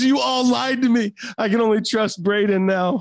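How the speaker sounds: high-pitched yelling out. Retelling what a sister yelled at the whole room: imitating someone yelling. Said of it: "She's yelling at the whole room".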